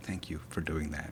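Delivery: soft, unvoiced, grateful whisper.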